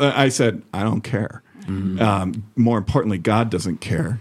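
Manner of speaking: usual speaking voice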